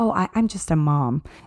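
slow, sheepish, apologetic, ashamed small voice. Retelling how a woman answered what she does: imitating a shameful tone. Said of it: "almost shamefully".

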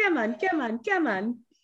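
put-on slight New Zealand accent, high, soft, birdlike. Imitating a bird on the speaker's shoulder that wanted food, little Kiwi accent. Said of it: "It had a little Kiwi accent".

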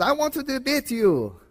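put-on Middle Eastern accent. Retelling what a man said when he called in on the radio, in a poorly done Middle Eastern accent. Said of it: "in his Middle Eastern accent".

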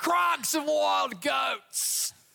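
very slow, high, grand drawn-out English accent. Leading everyone in saying a place name: Bear Grylls English accent. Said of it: "say it all together with a really great English accent".

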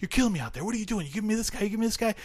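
acted, shrill, very high, upset screaming rant. Retelling a film scene where one character screams at another: imitating someone screaming. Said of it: "when he screams at John C. McGinley".

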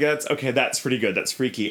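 normal talking voice

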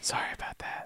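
whispered, sheepish near-whisper. Imitating a boy from the show apologizing: imitating a quiet sheepish apology. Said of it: "he says it, like, kinda quiet and sheepishly".

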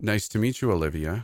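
ordinary delivery

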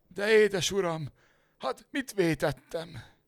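very high, terrified, frightened voice. Narrator reading a servant's reply to his master, asked in fright. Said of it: "Kérdezte rémülten a szolga".

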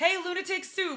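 mock, very high-pitched, shrill, loud yell. Speaker recalls the girl behind the bar greeting their group: retelling a yelled greeting. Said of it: "The girl behind the bar yells".

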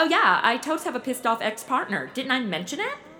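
plain

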